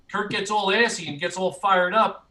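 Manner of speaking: usual speaking voice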